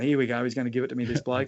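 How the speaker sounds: normal talking voice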